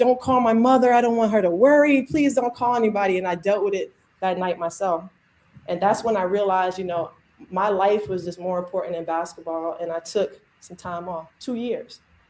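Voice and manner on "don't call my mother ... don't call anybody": tearful, crying pleading voice, higher. Recalling breaking down in front of a friend, retelling a tearful plea. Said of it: "I'm like".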